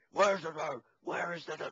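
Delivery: high, gruff yell. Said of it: "he yells at him".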